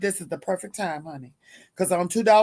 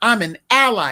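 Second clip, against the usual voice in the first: mock proud, loud, self-assured delivery; 5 dB louder than usual. Imitating a young lady declaring she is an ally: mock proud declaration. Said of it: "She said it with her chest out".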